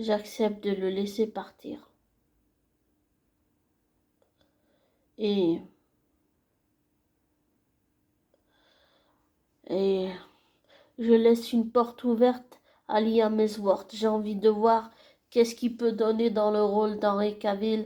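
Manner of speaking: moved, emotional voice welling up. A fan accepts the Geralt recasting and speaks emotional, moved. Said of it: "je suis vraiment émue".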